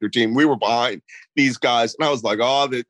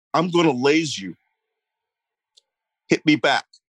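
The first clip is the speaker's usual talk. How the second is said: whispered voice. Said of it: "so I whisper".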